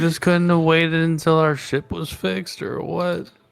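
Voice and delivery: hushed whisper. Whispering in character to another character at the table: whispering. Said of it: "whisper to her".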